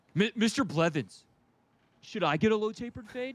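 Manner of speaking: put-on high-pitched, eager, pestering kid voice. Retelling what students asked their teacher: imitating a student. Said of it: "and they were like".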